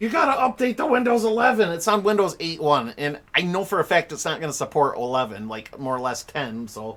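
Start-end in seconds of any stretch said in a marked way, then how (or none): 0.0-1.7 put-on, pitched-up, yelling, nagging laptop voice. Complaining about an old laptop, voicing it: imitating a laptop yelling. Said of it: "this laptop is, like, yelling at me".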